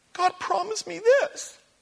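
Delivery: high-pitched, slow, crying whine.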